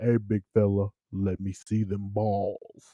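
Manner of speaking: put-on deep voice. Acting out a bit addressing a big fella, in a put-on deep voice. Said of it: "why is your voice so deep?".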